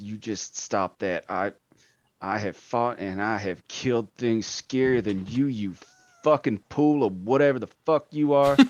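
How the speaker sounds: muttering, grumbling quietly under the breath to oneself. A narrator voicing a character losing control: muttering to himself. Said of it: "Marv is starting to mutter to himself".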